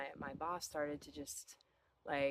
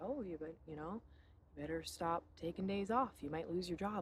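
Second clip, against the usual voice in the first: ordinary delivery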